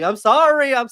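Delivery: acted shrill crying, very high and loud. Retelling a wrestler's apology to the crowd: imitating a wrestler crying. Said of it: "crying, like, to the crowd".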